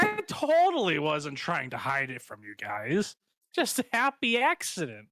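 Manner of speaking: tongue-in-cheek sarcastic, swooping and drawn out. Voicing a character who says he wasn't hiding it: sarcastic.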